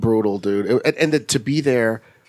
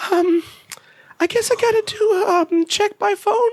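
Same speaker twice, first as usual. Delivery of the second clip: very high, trembling, quavering voice. Speaker retelling a phone call, imitating the woman's quavering voice as she came back on. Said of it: "this quavering voice comes back on the phone and goes".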